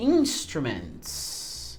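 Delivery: INstruments said very slowly, first syllable stressed.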